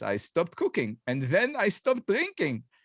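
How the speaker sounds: put-on Israeli accent, high and swooping. Telling how she chopped off her finger top, quote her in a Gal Gadot accent. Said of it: "in the requisite Gal Gadot accent".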